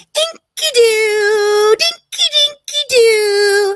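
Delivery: mocking imitation of speech. Mocking how she talks while she reads a love letter: mocking imitation of her talking. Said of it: "All I hear when she's talking like this is".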